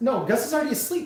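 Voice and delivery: high-pitched yelling at full volume. Answering another speaker about a sleeping child: yelling. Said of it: "and I'm yelling".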